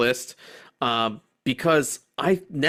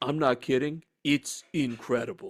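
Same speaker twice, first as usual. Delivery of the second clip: deadpan straight-faced delivery, quieter; 6 dB quieter than usual. Retelling how a friend praised a movie: imitating a friend's deadpan delivery. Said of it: "he said it with a straight face".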